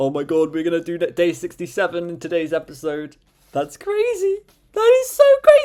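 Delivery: excited, high-pitched, rising, gushing delivery. A host introducing today's episode, excited and high-pitched. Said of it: "I get more high-pitched the more excited I am".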